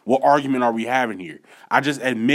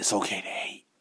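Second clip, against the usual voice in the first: hushed whispering under the breath; 3 semitones lower, 10 dB quieter than usual. Podcast host sharing something they say no one else will say: whispered. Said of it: "I had to whisper it".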